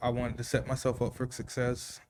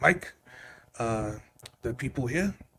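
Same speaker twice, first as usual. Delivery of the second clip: put-on speaking with a German accent. Retelling what a man told the speaker about being hired, speaking in his accent. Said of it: "I'm gonna speak in his accent".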